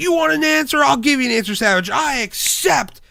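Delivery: mock high, mad, defiant tone. Retelling an argument from old shows, imitating Mr. Perfect getting mad. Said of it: "And then Perfect like gets mad".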